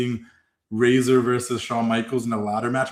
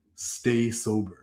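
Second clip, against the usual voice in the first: put-on stone-cold, very serious tone, quieter; 6 dB quieter than usual. Retelling how someone suddenly turned serious and warned: imitating someone turning very serious. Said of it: "he got very serious".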